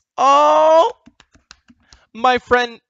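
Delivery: loud, moved outburst, overcome with feeling. Thanking a friend after the stream notification finally works, getting emotional. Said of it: "Sorry, emotional. I'm getting it emotional".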